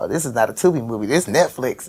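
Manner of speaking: soft, hushed half-whisper under the breath. Retelling what her oldest son said during the movie: imitating a half-whisper. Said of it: "he's whispering it to me".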